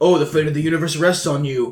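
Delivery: put-on, weird, gravelly voice. Mocking a movie actor's line with a weird grovelly voice. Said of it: "this weird grovelly voice".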